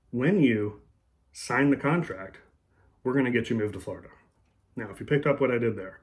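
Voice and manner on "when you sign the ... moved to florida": sign the contract slightly stern, raised, set off by pauses. Demonstrating an embedded command by pausing for effect, pauses around sign the contract. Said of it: "when you pause, slight elevation of tone, slight sternness in the tone, sign the contract, pause again".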